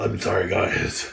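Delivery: rough, creaky, croaky sick-sounding voice. Showing how the voice sounded when very sick: imitating own sick voice. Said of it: "my voice, when you're sick, sounds like this".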